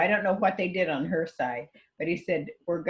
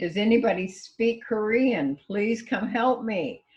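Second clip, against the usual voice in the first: put-on screaming, higher pitched; 4 semitones higher than usual. Retelling calling for a Korean speaker at an accident: imitating own screaming. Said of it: "I'm screaming".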